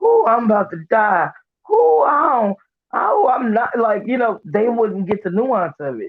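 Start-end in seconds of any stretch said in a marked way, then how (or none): 0.0-3.8 fake drunken groans, slow and drawn out. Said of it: "say I'm drunk or some shit".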